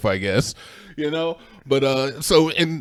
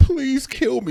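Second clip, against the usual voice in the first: mock very high, tearful crying voice; 13 semitones higher than usual. Retelling a horror film scene where a woman begs: imitating a crying plea. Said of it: "And she's crying".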